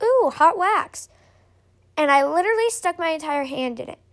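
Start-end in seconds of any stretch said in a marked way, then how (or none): 0.0-1.1 high, loud, slow, delighted ooh. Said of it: "I went".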